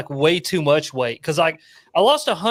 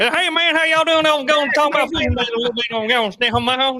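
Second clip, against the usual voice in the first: put-on East Tennessee good ol' boy Southern voice, pitched up; 7 semitones higher than usual. Imitate how the other person talked in a video, in a Boomhauer voice. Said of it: "it's more Boomhauer".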